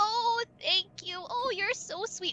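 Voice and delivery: put-on very high old granny character voice. Voicing the grandmother who greets the players: grandmother voice. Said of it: "She just reaches out".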